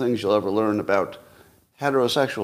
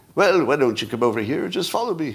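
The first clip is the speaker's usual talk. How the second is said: worst-ever, terrible, put-on British accent; 4 semitones higher than usual. Voicing a dog in a video giving someone a warehouse tour: bad british accent. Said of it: "saying in a British accent".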